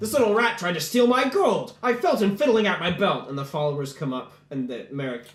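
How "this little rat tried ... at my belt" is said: high, furious, angry, accusing shout. Voicing an accuser in the marketplace: furious yell. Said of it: "he yells that at you".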